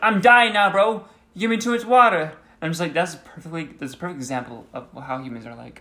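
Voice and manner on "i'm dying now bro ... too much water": put-on gangster voice, yelling, much higher, louder. Imagining what a talking plant would say, yelling in a gangster accent. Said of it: "a plant that yelling at you in like a gangster accent".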